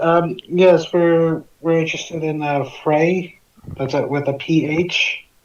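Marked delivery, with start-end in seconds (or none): none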